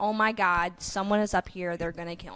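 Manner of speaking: panicked, freaking-out delivery. Retelling a friend's reaction to banging on the back door: imitating someone freaking out. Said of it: "she starts freaking the heck out".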